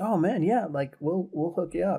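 put-on eager excitement. Retelling how the booth organizer answered an email request: retelling an excited reply. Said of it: "he was really excited".

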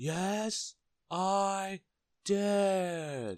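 shrieked at the very top of the voice, drawn out. Mr. noisy answers mr. bacon in his shop, shouting at the top of his voice. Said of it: "shouted Mr. Noisy at the very, very top of his voice".

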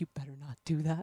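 low, soft, put-on calm but menacing voice. A speaker who can't get loud shows how she warns the kids, mock-menacing calm. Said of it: "in a menacing but like calm".

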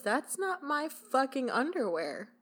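hostile, confrontational, cutting, aggressive tone. Retelling how a woman turned to her husband: imitating an aggressive retort. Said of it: "stares at her husband aggressively and goes".

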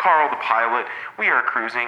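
chopped-up, chest-beaten voice like helicopter rotor blades. Demonstrating the old radio pilot bit while beating on the chest: Carl the pilot helicopter voice. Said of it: "That did sound like a helicopter".

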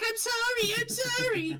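put-on little goblin voice. Voicing a little goblin popping out of a broken machine: little goblin voice. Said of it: "a little goblin comes out. He's like".

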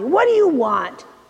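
rough, harsh tone. A woman opens her door to the narrator: harsh voice. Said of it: "she said in a harsh voice".

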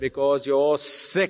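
emphatic, pointed, hammering home each word. Retelling what she answered when asked why: imitating her emphatic delivery. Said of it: "she said it with a lot of emphasis".

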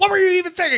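high, loud yelling, scolding tone. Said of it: "Starts yelling at him".

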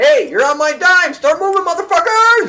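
rude yell, very loud, shrill, high and rising. Retelling how he yells at firefighters from his car window, retelling his own yelling. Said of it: "I start yelling to them".

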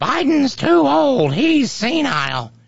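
very high, slow mock caveman grunting voice. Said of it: "walking on their knuckles and grunting about".

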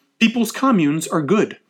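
ordinary talk

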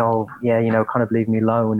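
normal talking voice

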